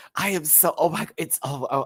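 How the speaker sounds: thrilled, high excited shrieking, words breaking off. Reacting to a favourite contestant being announced: excited screaming. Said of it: "I'm just screaming right now".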